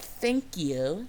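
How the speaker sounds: put-on patronizing, most condescending talking-down tone. Retelling a woman's reply after the speaker says she's done: mimicking a condescending tone. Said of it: "like in the most condescending voice".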